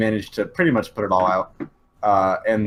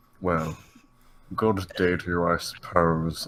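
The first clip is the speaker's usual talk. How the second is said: soft, hushed character voice; 3 semitones lower, 5 dB quieter than usual. Game master voicing a character in a tabletop campaign; Snape voice. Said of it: "I'm doing more of my Snape voice".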